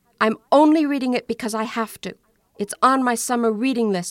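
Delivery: defensive, guarded, self-justifying tone. Narrator reads a daughter answering her mother's question at bedtime, defensive. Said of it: "Michelle said defensively".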